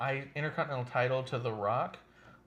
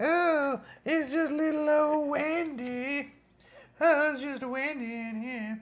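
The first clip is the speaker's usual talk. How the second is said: very high, loud, slow cartoon voice; 14 semitones higher, 6 dB louder than usual. Playing Wendy as a joke for the others: sounds like South Park. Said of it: "You sound like South Park".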